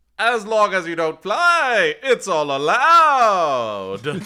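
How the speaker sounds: thunderous, very loud, high-pitched booming voice. Narrator voicing Brimstone's reply to a question in the story: Brimstone's booming voice. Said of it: "you sort of hear Brimstone's booming voice".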